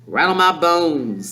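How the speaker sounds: eerie, spooky ghost-story parrot voice. Reading the story aloud, the narrator voices the parrot: spooky parrot voice. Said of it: "giving a wonderful imitation of a spooky voice".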